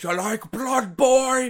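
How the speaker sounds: put-on high old man voice. Imagining a scene in a horror movie pitch: old man voice. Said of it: "An old man walks up to you and goes".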